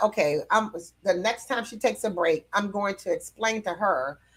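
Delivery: ordinary delivery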